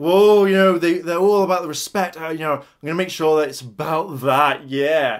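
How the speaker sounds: put-on careless sarcastic tone. Complaining about how Logan talks about respect, the speaker mimics him; mocking Logan's sarcastic tone. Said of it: "Very sarcastic, like".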